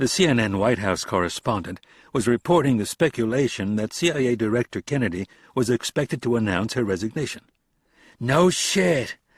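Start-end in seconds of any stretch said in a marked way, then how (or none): 8.2-9.1 high, laughing through the words. Reading a scene where a character watches news: laughing while talking. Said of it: "Garrett laughed".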